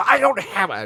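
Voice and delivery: shrill, very high, screeching outburst. Retelling how she answered about the airbrush: imitating her screaming. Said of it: "she was screaming at me".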